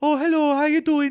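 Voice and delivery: very high-pitched put-on Brummie accent. Speaker says they can only do one brummie voice, then does it: brummie accent. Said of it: "I can only do the one Brummy".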